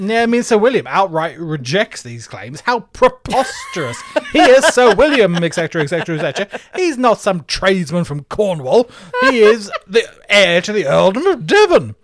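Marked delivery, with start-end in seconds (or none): 2.6-11.8 put-on, mounting angry voice, raised high. Retelling a nobleman rejecting claims, Sir William voice, angry. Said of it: "in that voice, he says it".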